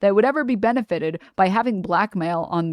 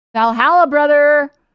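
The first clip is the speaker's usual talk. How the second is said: put-on loud, high, rowdy drunken hollering; 7 semitones higher, 7 dB louder than usual. Speaker complains about a guy who gets drunk, then imitates him: imitating a drunk guy. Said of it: "instead of drunk?".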